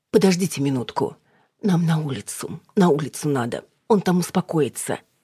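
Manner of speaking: plain reading voice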